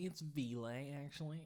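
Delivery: put-on annoying nasal teen girl voice. Retelling a high school girl correcting teachers, Ville's nasal voice impression. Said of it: "she had the most annoying fucking nasally voice".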